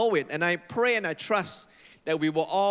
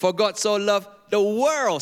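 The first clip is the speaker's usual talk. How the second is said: WORLD stressed, higher and louder. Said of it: "each time I emphasize different word".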